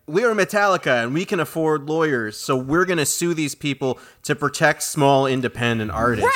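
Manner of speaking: ordinary delivery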